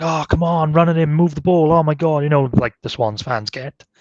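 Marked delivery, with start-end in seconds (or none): 0.0-2.2 play-acted high-pitched, exasperated, frustrated shouting. Retelling frustrated crowd reactions at a match: imitating fans screaming and shouting. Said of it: "everybody was screaming and shouting".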